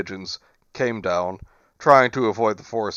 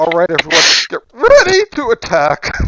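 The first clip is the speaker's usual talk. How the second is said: put-on loud, squeaky, swooping teen voice; 8 semitones higher, 11 dB louder than usual. Joking that Griffith is still going through puberty, voicing him as a squeaky teen. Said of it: "I just imagine Griffith as like a squeaky voiced teen".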